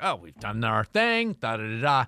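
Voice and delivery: smug, cocky, self-assured, dismissive know-it-all tone. Retelling leaving a ride after its first drop: imitating own cocky self. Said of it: "I was so cocky about it".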